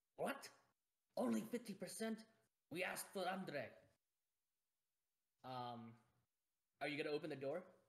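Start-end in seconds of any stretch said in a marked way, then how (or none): 0.2-3.7 high, angry snarling burst of temper. Narrating a scene to players and voicing the hot-tempered rogue, Valentina's snarling voice. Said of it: "you can hear her snarl and say".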